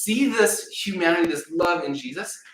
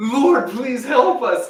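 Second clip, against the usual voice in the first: mock desperate pleading, high and raised; 8 semitones higher, 6 dB louder than usual. Retelling a prayer Janelle said aloud, imitating Janelle's desperate plea. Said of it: "she sounded desperate".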